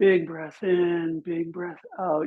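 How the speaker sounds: breath-altered voice with head tipped back. Leading a backbend with the throat opened toward the ceiling: voice changed by the backbend. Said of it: "You can hear the changing in my voice".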